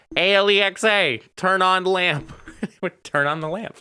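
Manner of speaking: mock very high, shrill hollered yell. Speaker retelling calling out to Alexa for the lamp: retelling a yell at Alexa. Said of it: "so I just yelled".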